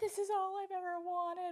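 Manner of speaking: put-on very high, blubbering, bawling sob. Retelling a viral video of a mom opening her gift, imitating someone bawling. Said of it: "she just starts bawling".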